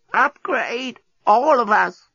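very high, croaking, ancient-sounding voice. A creature waves a gadget at a deskbot and croaks in an ancient voice. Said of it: "croaked in an ancient voice".

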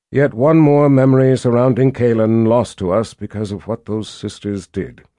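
plain reading voice

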